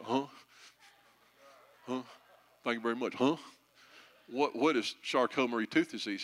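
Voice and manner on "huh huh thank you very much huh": put-on, good old Memphis accent. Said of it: "my [name] imitation".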